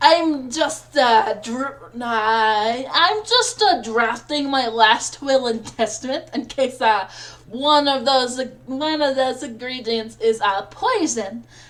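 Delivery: shoddy put-on French accent sliding Eastern European, drawn-out I'm. Voicing a character in a game: bad french accent drifting eastern european. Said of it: "The shitty fucking French accent is bleeding into".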